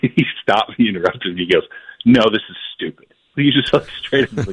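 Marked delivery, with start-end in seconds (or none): 2.0-3.1 put-on mad ranting voice. Retelling how a gm interrupted, imitating an angry gm.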